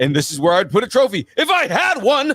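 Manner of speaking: belted out loud, high and sing-song. Quoting a favorite cartoon line to friends, Timmy Turner's dad voice. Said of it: "all I could think of is Timmy Turner's dad".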